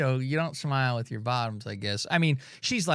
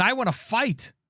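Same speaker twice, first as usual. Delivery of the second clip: put-on wrestler screaming, higher pitched; 8 semitones higher than usual. Retelling what a beaten-up wrestler screamed after the match: imitating Cody screaming. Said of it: "and he screams".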